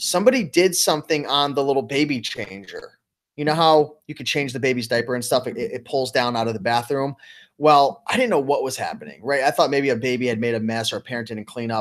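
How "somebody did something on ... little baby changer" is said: ordinary talk, nothing marked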